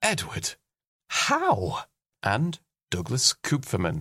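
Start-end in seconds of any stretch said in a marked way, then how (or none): 0.0-1.8 awed, thoroughly impressed, very high-pitched, swooping. Podcast Patreon compliments, pronouncing a supporter's name thoroughly impressed. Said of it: "pronounced as if thoroughly impressed".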